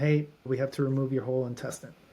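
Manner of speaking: plain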